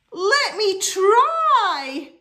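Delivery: very loud, high whooping cry, try stretched out. After the wise old owl explains how it gets a hug, he answers: whooping. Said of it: "whooped Douglas".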